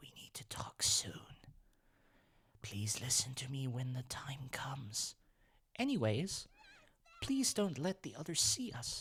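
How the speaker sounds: put-on character whisper, very quiet. Storyteller voices Raspberry, who wants to talk in private, whispering very quietly. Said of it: "Raspberry whispers so quietly".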